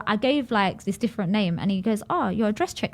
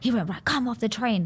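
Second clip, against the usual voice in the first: mock-angry man voice, slower. Retelling a man on a train who came over to him: imitating an angry man. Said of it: "this guy was angry".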